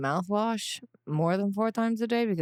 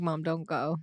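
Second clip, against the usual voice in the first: acted-out tearful, sobbing child voice; 3 dB quieter than usual. Retelling a child's plea at camp drop-off, imitating a sobbing child. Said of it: "He was just sobbing".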